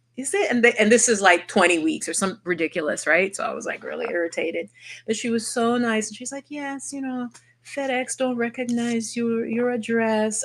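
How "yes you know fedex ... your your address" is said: put-on gentle, friendly, soft Jamaican accent, pitched up. Retelling what a nice woman told her about her address: soft Jamaican accent. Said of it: "a soft Jamaican accent I really like".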